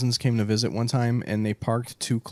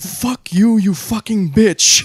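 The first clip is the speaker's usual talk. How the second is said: top-of-the-lungs yelling, shrill, very high and loud; 11 semitones higher, 9 dB louder than usual. Retelling how the dad yelled at a woman, the speaker imitates his yelling. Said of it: "just repeatedly starts yelling at her".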